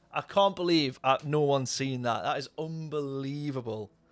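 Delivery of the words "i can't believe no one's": usual speaking voice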